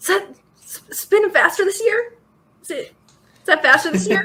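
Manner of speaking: anxious but holding together. Retelling someone asking Luke a question, acting worried but keeping cool. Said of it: "trying to keep cool but very worried expression".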